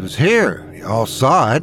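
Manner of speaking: ordinary delivery, nothing marked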